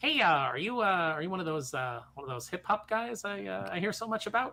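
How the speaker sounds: put-on broad, very bland Midwestern accent.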